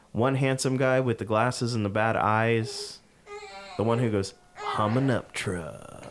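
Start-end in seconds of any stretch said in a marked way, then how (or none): 4.5-6.0 put-on crude, lowbrow, trashy-sounding American accent. Imitating an american guy with glasses, trashy american accent. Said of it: "It's so much better in a trashy American accent".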